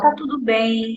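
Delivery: gentle, tranquil, calm and soothing comforting tone. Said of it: "falar calmo, tranquilo, com um sorriso nos lábios, sempre acalmando, ó".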